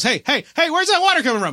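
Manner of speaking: very high, shrill shouted yell. Retelling how a player in the game yelled about water: imitating someone yelling. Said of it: "one of them yells".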